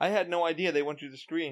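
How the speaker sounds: normal talking voice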